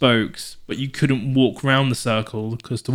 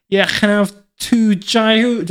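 put-on pitched-up Liverpool Scouse accent; 10 semitones higher, 6 dB louder than usual. Recalling a Scouser ordering on a Greek island: Scouse accent. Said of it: "like in the scouse accent".

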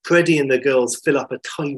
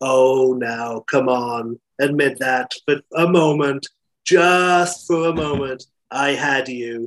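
put-on spoken in an American accent. Retelling what Janet said to Lawrence after a broken line, in her American accent. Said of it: "in her American accent".

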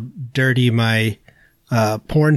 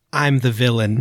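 ordinary talk

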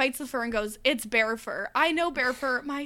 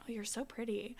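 lower voice, much quieter; 10 semitones higher than usual. Showing how to compliment someone while flirting, in a lowered voice. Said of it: "you can't go into like your high voice".

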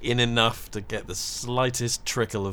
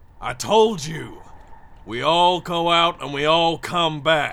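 forceful, loud, slow, high drawn-out yell; 8 semitones higher, 8 dB louder than usual. Holding a blade to a captive's neck, shouting. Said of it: "I'm just going to initially shout".

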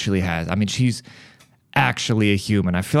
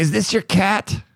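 very high, angry, heated voice; 11 semitones higher than usual. Retelling a neighbor who came knocking on the door: imitating an angry neighbor. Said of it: "fucking heated".

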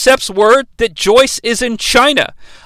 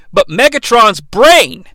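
usual speaking voice

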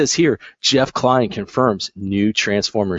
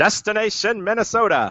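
put-on very high-pitched, old-fashioned, old-timey voice; 11 semitones higher than usual. Deciding to do the next bit in an old timey voice. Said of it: "I should just do this in old timey voice".

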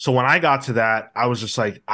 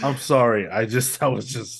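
words breaking up with giggles and laughter. Apologizing to the others while laughing while talking. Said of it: "You had a case of the giggles".

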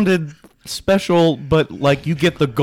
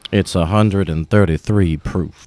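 very deep put-on narration voice, dropped all the way down; 8 semitones lower than usual. Reading out a bourbon's proof after being asked: Morgan Freeman voice. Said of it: "Can you do a more Morgan Freeman voice".

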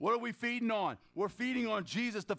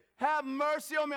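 mock loud cry out, higher; 5 semitones higher than usual. Retelling how a man cried out to Jesus, retelling a loud cry. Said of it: "I'm sorry I woke him up".

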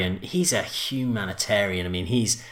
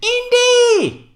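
piercing, very high, very loud, drawn-out shriek; 9 dB louder than usual. Listing people who share a birthday, then doing a Kate Capshaw impression. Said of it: "that was a good impression".

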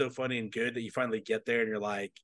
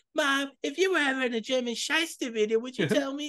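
put-on cartoon kid voice, higher pitched; 13 semitones higher than usual. Retelling a scene where the character asks his mom a question: Cartman voice. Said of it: "When they see his mom".

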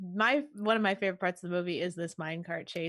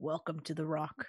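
put-on Scottish accent, quieter; 3 semitones lower, 6 dB quieter than usual. Quoting a movie scene line, doing a bad Sean Connery impression. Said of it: "I can't do a very good Sean Connery".

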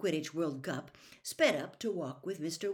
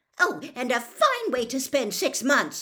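piercing, shrill, very loud shriek; 7 semitones higher, 9 dB louder than usual. After Fred shouts at her for throwing the toffees away, his mother answers, shrieking. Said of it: "she shrieked".

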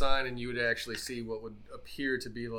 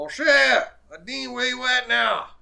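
high-pitched, loud, far-carrying calling out. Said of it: "he'd probably call out for him".

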